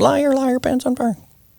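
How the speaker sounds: put-on very high, squeaky little-girl voice. Describing how he had a young girl say this, in a squeaky little girl voice. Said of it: "little squeaky voice".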